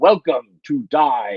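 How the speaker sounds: loud, stiff, stilted villain voice. Retelling the Magneto line from the old X-Men arcade game: imitating Magneto's arcade line. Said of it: "Magneto showed up and he was like".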